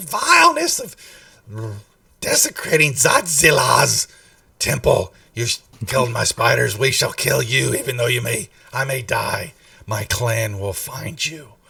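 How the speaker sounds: voice thick with hisses and phlegm. Acting out what she says to the players, in a hissing, phlegmy voice. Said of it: "In some voice like that, ... a lot of sisses and a lot of phlegm".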